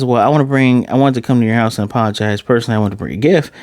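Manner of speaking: ordinary talk, nothing marked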